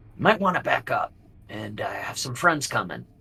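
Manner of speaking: secretive, soft, hushed whisper, close to the ear. Game master voices a character who climbs the wall and whispers to a player, whispering. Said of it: "and he whispers to you".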